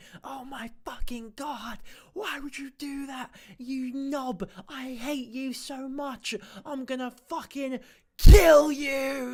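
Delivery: screaming through a half-whisper. Mocking a man who sounds like a kid gaming at 2 a.m., mock whisper-screaming. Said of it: "so he just sort of whisper screams like".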